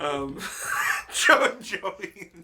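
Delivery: cracking up, giggling.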